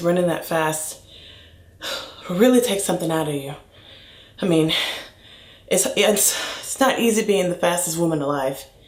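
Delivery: out of breath, breathless and winded. After running fast, the speaker talks to viewers, out of breath. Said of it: "I'm so out of breath".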